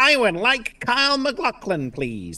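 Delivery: very high, slow, swooping voice. Retelling a casting conversation between directors: David Lynch impression.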